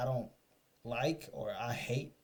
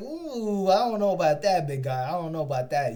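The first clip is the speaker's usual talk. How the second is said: loud, unconvinced, doubtful, skeptical cop voice; 4 semitones higher, 9 dB louder than usual. Mocking how a cop looks at a bragging guy: imitating a doubtful cop. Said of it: "the cop is looking at him like".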